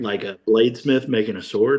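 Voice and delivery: ordinary talk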